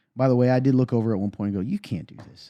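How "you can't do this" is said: dead calm, hushed, almost-whispered delivery. Recounting what they said to someone after the game, acting out speaking very calmly. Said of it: "I just very calmly".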